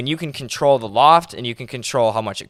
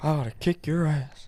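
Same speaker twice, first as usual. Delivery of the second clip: soft, muttered, fed-up cartoon dad voice; 4 semitones higher, 7 dB quieter than usual. Quoting a cartoon line to Bobby, doing a Hank Hill impression. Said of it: "Hank Hill?".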